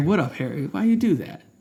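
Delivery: very chill, easygoing, laid-back hippie voice. Retelling how a calm Dumbledore would ask Harry: very chill Dumbledore voice. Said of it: "very chillly asking Harry".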